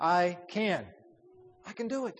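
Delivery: CAN stressed and lifted in pitch.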